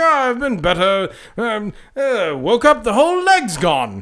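super British, upper-class, slow, stiff-upper-lip calm. Retelling a film scene about a lost leg: super british stiff upper lip. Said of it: "being super British and upper, upper, stiff upper lip".

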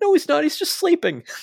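mock squeal, very high and loud. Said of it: "Starks is like".

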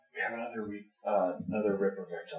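whispered aside. Stepping out of a woman's earshot to tell the others, whispering. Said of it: "kind of whisper to it".

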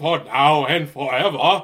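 very loud, booming vampire voice. Imitating how a guy comes in on his verse, in a Dracula voice. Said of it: "Transylvania Dracula bullshit is that".

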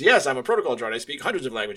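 put-on robotic translator voice. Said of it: "he does his own voice as C three P O".

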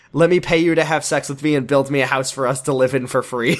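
plain

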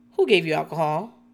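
put-on flat delivery. Retelling how Marisol answers Mama Elsa's refusal to sit down, imitating Marisol's deadpan. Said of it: "Marisol deadpans like".

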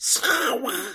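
very high, squawky cartoon voice. Recapping a game scene, quoting a line: Donald Duck voice. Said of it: "love to hear Donald Duck go".

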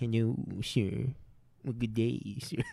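low, hushed cartoon hound voice. Doing cartoon impressions for the others, now a Droopy Dog impression. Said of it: "That's Droopy Dog now".

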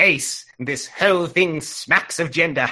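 put-on sci-fi character voice with rolled R. Asked to do the Seventh Doctor, addressing Ace, in a Seventh Doctor voice. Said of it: "request for Seventh Doctor voice".

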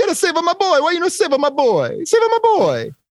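very high, swooping, yelled delivery. Retelling a scene of an Italian dad yelling at a rookie police officer, mock yelling. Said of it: "some Italian dad just yelling at the rookie police officer".

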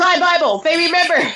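acted, pitched-way-up, joyful cheer of delight. Retelling own reaction on hearing the name, imitating own past shout. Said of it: "Sorry for shouting".

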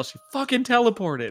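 very high shouted outburst, in character. Shouting in character that she teleported away: in-character yell.

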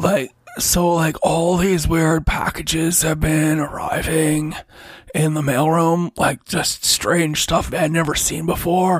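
put-on spaced-out stoner delivery. Blaze, told to lay off the jazz cabbage, answers Craig: stoned Blaze voice. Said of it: "His name is [name]. Oh, he could be a Magman. / you gotta lay off the jazz cabbage when you're working".

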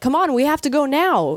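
mock high shout. Recalling how she hurries someone to leave, the speaker is retelling her own shouting. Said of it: "I'm like shouting at him".

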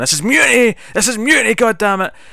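high, loud, furious scream. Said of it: "he's screaming at everyone".

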